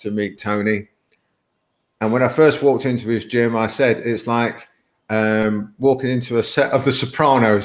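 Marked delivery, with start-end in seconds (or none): none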